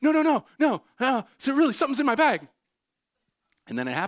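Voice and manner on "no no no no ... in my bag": very high near-sobbing scream, pleading. Retelling a night when friends tried to calm the speaker down: retelling a tearful scream. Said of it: "I'm screaming on the verge of tears".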